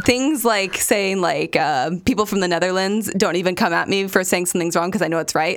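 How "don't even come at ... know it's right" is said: ordinary talk, nothing marked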